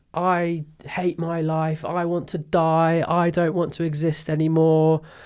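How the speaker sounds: put-on upset child's scream, high, drawn-out and very slow. Retelling a child coming home upset from school: imitating Arthur screaming. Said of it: "he was screaming to me and my wife".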